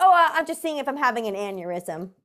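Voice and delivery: acted totally nonchalant, breezy, offhand casual tone. Retelling his odd explanation for lifting his arms: imitating someone's very casual tone. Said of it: "in the most, like, casual way ever".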